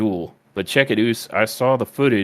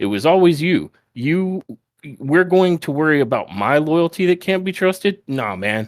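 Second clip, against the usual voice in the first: higher, put-on upset wrestler voice; 5 semitones higher than usual. Retelling a wrestling segment, imitating Sami Zayn, very upset. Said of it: "very upset".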